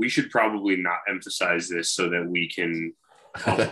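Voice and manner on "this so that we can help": normal talking voice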